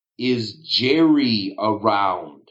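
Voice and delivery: slow, deliberate delivery with drawn-out words. Repeating the question to a suspicious man at the door, said slower.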